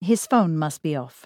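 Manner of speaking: usual speaking voice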